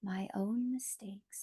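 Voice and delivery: whispering. Leading a group affirmation, repeating it once more: whisper. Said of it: "Now in a whisper".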